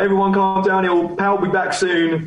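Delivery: imitated performer shout. Telling a story, speaker quotes a performer addressing the crowd: retelling a stage shout. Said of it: "dude's shouting on stage".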